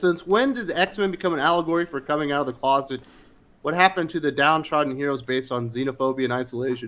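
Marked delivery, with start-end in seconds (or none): none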